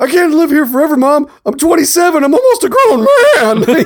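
loud voice cracking into a very high squeak mid-word. Quoting a movie character talking to his mom: imitating a voice cracking.

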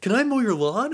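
very high, really keen, eager and enthusiastic. Retelling knocking on a door with a lawnmower: imitating own excited enthusiastic greeting. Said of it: "really excited and enthusiastic".

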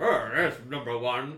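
loud, teasing, playful delivery. Retelling a TV scene, quoting the character Riker: imitating Riker. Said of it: "He's like".

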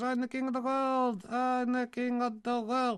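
feeble, high, drawn-out voice. Mocking a figure who repeats the same thing every week: imitating the King of the World. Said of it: "it wasn't a very good impression".

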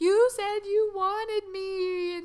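mock crying, very high-pitched, very slow, drawn-out sobbing. Recounting a film scene, imitating the little girl sobbing. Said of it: "she's just sobbing".

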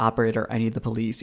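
put-on calm voice. Recounting a story, the speaker quotes the boyfriend calling 911, imitating a really calm voice. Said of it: "really calmly goes like".

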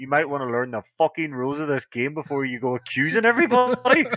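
furious angry outburst. Speaker retells unmuting to snap at a player accusing everyone in a game; retelling own angry outburst. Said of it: "I don't know why I was so angry".

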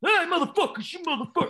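mock, high, belted, cheesy frontman holler.

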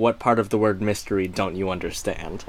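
mock dry deadpan, low, quick, flat monotone. Retelling a woman's reply to a tourist's question, imitating a deadpan monotone. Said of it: "quips back in a deadpan monotone".

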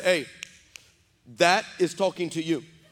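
ordinary talk

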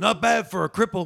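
bad exaggerated Spanish accent. Quoting to sum up an opinion of a performance: bad Danny Trejo accent. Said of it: "Only if you do it in a terrible accent".

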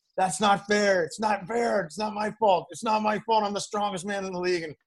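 high, whiny mock yell.

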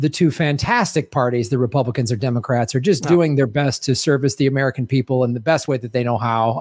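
ordinary talk

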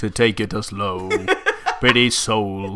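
voice pushed as low as possible, exaggerated. Speaker trying to sound unlike the other speaker, deliberately deepened voice. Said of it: "I'll endeavour to deepen my voice as much as possible".

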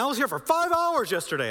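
loud, shrill yelling. Recounting a lady in the line who started yelling: retelling a lady's yelling. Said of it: "She starts yelling".

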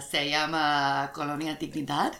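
speaking with a Chilean accent. Saying the name when asked to say it like you're from Chile: Chilean Spanish accent. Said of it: "say it like you're from Chile".

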